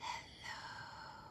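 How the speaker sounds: soft, very quiet, barely-there whisper. Leading a bread-and-butter hello game with listeners: hello as quiet as possible. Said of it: "Let's say hello as quiet as we can".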